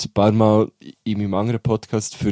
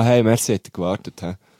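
put-on haughty, smug, arrogant tone. Showing how a merci can come across as overbearing: mock-arrogant tone. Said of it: "Das Merci kann ja auch schnell mal so fast ein bisschen überheblich wirken. So".

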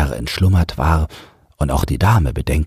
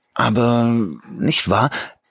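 faltering, tentative, hesitant, slightly raised in pitch; 8 semitones higher than usual. Still suspicious, a man starts questioning the narrator again, hesitant. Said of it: "fing er nochmals zögernd an".

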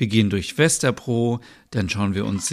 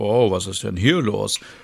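plain

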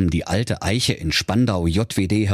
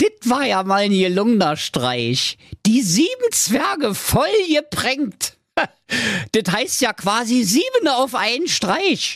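very high, gleeful gloating through laughs; 11 semitones higher than usual. Narrator reads a prankster talking to himself on the way home, laughing gloatingly. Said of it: "rieb sich hämisch die Hände und sprach lachend zu sich".

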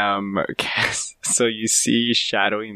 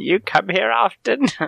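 put-on old hag voice, much higher pitch; 12 semitones higher than usual. Showing the others a best hag impression, greeting fellow hags. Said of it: "This is my best hag impression".

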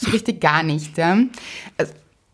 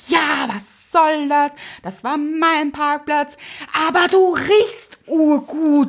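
furious, high, very slow, drawn-out angry yelling; 7 semitones higher than usual. Retelling a man's shouted reply in a dispute over a parking spot, retelling a yell. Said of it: "er hat mich angeschrien".

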